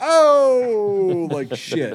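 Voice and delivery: loud Jersey accent with a stretched, drawn-out Oh. Describing how they slip into mocking Guidos: full Guido mode. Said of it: "I turn into full Guido mode".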